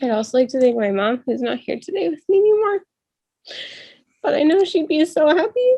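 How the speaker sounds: choked up, tearful, high voice cracking. Graduate thanking their late mom during a graduation speech, voice breaking, crying. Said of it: "I didn't mean to cry".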